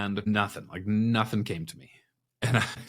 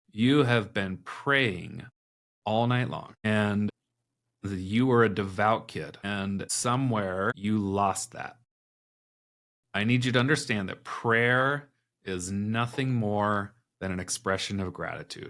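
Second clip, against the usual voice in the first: usual speaking voice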